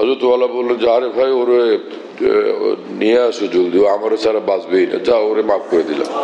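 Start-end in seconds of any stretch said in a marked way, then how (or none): none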